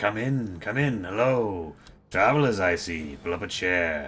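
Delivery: deep, gravelly, raspy, slow hobgoblin voice. Voicing a hobgoblin barkeep welcoming travelers: deep raspy hobgoblin voice. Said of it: "is his voice that deep and raspy".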